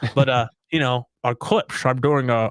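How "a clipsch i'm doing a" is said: put-on s in clips slurred into a sh sound. Joking about a lisp-like pronunciation of a word: Sean Connery impression. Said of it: "I'm doing a, a Sean Connery impression".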